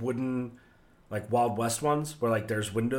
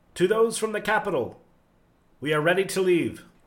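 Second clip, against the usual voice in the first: loud, high-pitched shouting; 8 semitones higher, 7 dB louder than usual. Voicing a cloaked figure who steps in after dinner, shouting. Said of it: "just sort of shouts".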